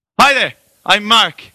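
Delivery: over-eager, bouncing, very high, very loud, bubbly. Retelling meeting an over-eager Irishman at a friend's volleyball gathering, imitating over-eager Mark. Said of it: "this over-eager Irishman comes bouncing up to me".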